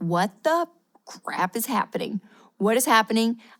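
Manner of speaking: put-on panicky, freaked-out voice. Retelling a car breakdown on the interstate, reenacting own panic. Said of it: "I'm freaking out".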